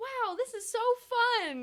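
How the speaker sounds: shrill, very high, loud gushing burst of delight. Retelling watching the new characters, imitating own past excitement. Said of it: "the joy that I had".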